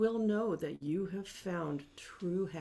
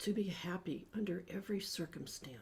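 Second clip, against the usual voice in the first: whispered, inward, to oneself; 7 dB quieter than usual. Repeating an affirmation after the leader, now in a whisper. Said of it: "Now more in a whisper".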